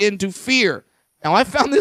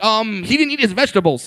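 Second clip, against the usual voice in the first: ordinary delivery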